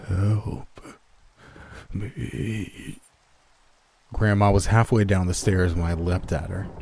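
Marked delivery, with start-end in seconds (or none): 0.1-3.0 whispered, low, burbling creature voice. Reading a story, the thing chasing the narrator speaks, low and burbling. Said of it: "Its voice was low and burbling".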